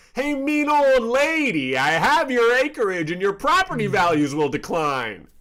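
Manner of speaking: very high, loud, shrill shouted yell. Voicing a character who shouts at a house: yelling in character. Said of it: "Hey Kid yells at the".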